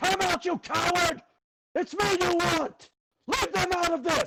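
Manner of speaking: very loud, high-pitched screamed call-out. In a tabletop game, a character calls out to a hidden enemy in the forest: screaming out. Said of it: "you're gonna hear him just scream out".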